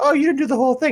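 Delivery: shrill taunting voice.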